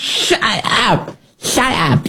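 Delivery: high, soft mock impression, pitched way up. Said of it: "That was Nancy Pelosi's version of that".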